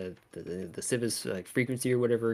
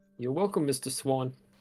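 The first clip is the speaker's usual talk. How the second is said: put-on old-fashioned Victorian English accent; 3 semitones higher than usual. Ending a call for Swan Cabs, slipping into a Victorian English accent. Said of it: "I didn't even mean to do his accent".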